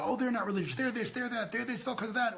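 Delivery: imitated screaming. Retelling how everyone accuses other groups, imitating people screaming. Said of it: "Everybody's screaming at each other".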